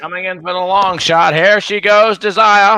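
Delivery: race announcer call with drawl, drawn-out end. Doing a horse race call for the others, race announcer call with drawl. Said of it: "the draw you put on the end there".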